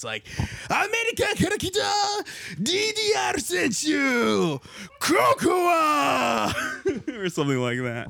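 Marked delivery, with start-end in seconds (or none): 0.7-6.5 very high, very slow, drawn-out announcer voice. Showing how a competitor's name should be said, in the announcer voice. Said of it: "you gotta do it in the announcer voice".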